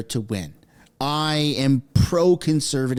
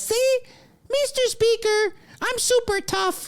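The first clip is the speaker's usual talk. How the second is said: very high, squeaky, mocking cartoon-mouse voice. Speaker mocks something Chrystia Freeland said: mocking Chrystia Freeland, squeaky voice. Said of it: "the squeaky Mickey Mouse voice".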